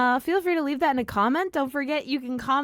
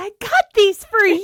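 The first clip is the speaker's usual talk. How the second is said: very loud, shrill, high-pitched put-on voice; 7 semitones higher, 8 dB louder than usual. Speaker quotes what a man says to someone, in a higher voice. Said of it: "he sounds like a higher voice".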